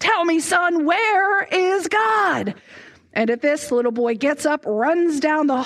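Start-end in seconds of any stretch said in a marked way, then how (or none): 0.0-2.5 put-on pastor's raised, pressing voice, higher and slow. Telling a story, acting out the pastor questioning the boy: retelling a raised voice. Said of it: "the pastor raises his voice".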